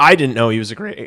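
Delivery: voice cracking. Speaker talking about a new hire, voice cracking. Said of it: "Oh my voice crack".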